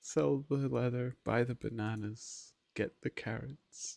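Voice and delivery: very quiet, hushed, murderous-sounding, creepy exasperation. Listing chores in exasperation: creepy exasperated tone. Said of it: ""Sell the leather" in that specific tone".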